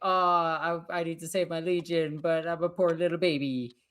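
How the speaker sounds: mock sulky, self-pitying, poor-little-me whiny moan. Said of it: "Mortarion was being a bitch and like".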